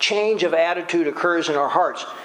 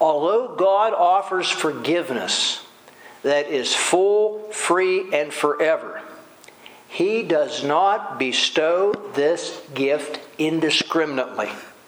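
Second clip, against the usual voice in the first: very slow, weighty, deliberate, word by word. Speaker delivering a sentence they call profound, very slowly. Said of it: "I'm going to say this very slowly".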